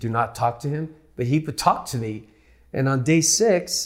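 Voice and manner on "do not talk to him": ordinary talk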